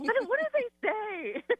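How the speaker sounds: exaggerated, very high, slow, puzzled delivery.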